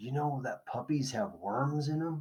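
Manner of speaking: whispering. Narrator reads Darlin nudging Marty while reading about worms, whispering. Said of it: "she whispers".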